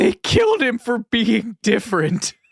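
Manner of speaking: mock tearful, sudden crying, high swooping voice. Retelling what the wife said as the credits rolled: imitating wife in tears. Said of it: "she just bursts into tears".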